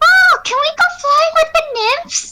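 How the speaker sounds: put-on squeaky, very high, childlike voice. Performing a requested line for the audience in a nugget voice. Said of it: "I gotta get my nugget voice in".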